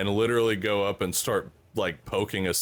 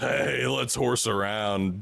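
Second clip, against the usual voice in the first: put-on drunk man voice. Retelling how a drunk man teased his pet bear: imitating a drunk man.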